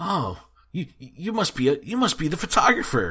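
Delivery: high, swooping, mock dense and oblivious voice. Retelling a cartoon scene, quoting a character: imitating a clueless character. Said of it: "he's just so clueless".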